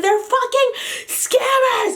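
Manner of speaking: very high-pitched, furious, angry cussing outburst. Recounting going off in the middle of a store; retelling an angry yell. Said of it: "And I'm yelling in the middle of the store".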